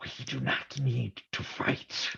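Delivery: whispered, breathy monster growl, words chewed. Narrator reading a monster character's line in the story, in a growling monster voice. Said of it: "the monster growled, chewing his words".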